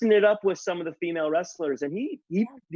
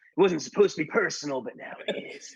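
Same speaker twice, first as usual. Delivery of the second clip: put-on old, scary wrestler voice; 2 semitones lower than usual. Imitating Jake the Snake's promo after saying he sounds old: Jake the Snake voice. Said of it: "he's like".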